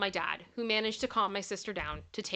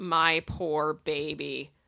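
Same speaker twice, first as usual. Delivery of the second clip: put-on muttered line, lower pitch; 5 semitones lower, 3 dB louder than usual. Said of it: "My mom just muttered".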